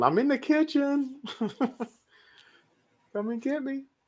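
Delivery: mock very high, very slow, drawn-out hollering. Mocking a character who calls out to a killer, mock yelling. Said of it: "It's like yelling".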